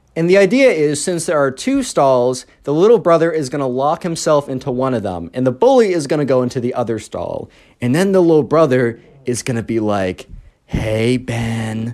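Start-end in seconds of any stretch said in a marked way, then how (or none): 10.7-12.0 mock weird, creepy put-on voice. Retelling a bathroom prank plan: imitating a weird creepy voice. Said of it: "in a very kind of weird, creepy voice".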